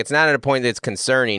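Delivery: plain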